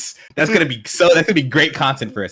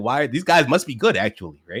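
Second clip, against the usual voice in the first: usual speaking voice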